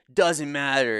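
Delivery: put-on sloppy drunk slur, words smeared together. Retelling a video of a drunk college kid answering a question: imitating slurred drunk speech. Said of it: "he's slurring his words the whole time".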